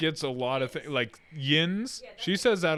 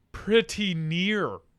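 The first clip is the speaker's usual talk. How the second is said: plain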